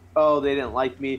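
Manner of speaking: plain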